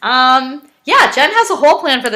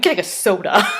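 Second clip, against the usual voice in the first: mocking disdainful tone, lower and quieter; 4 semitones lower, 5 dB quieter than usual. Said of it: "that was a funny way to say that".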